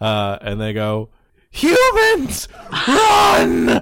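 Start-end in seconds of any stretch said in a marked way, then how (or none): 1.5-3.8 very loud, shrill, very high frantic panicked scream. Voicing dwarves fleeing in a panic: panicked dwarves shouting. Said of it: "you hear a cacophonous panic break out".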